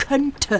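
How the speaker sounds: stress placed on the word könnte. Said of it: "Ich betone".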